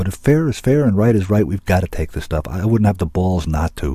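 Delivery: ordinary delivery, nothing marked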